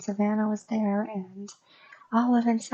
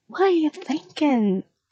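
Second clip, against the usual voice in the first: high, loud, bad wobbly put-on accent, drifting Scottish; 5 semitones higher, 5 dB louder than usual. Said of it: "That might have honestly sounded Scottish".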